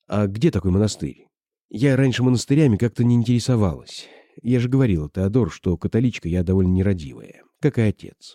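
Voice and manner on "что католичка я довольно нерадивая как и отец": ordinary delivery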